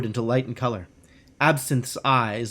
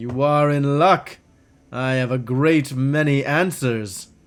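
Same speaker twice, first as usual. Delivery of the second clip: smooth, rich, silky voice. An elf shop owner answers a customer with a question, in a smooth, rich voice. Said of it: "The elf's voice is smooth as silk and rich as clotted cream".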